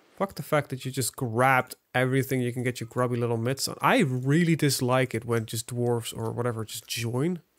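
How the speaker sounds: ordinary talk, nothing marked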